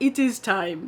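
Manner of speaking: grand, theatrical cartoon king voice, like a film king. Speaker describes their mind telling them it is time, Mufasa voice. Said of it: "in my best Mufasa Lion King voice".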